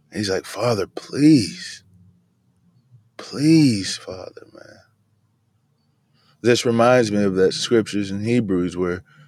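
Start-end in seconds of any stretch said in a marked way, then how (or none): 0.4-4.4 slow, tearful, play-acted weeping and pleading. Retelling how a son begs his father again: acting out tearful pleading. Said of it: "he was pleading with tears".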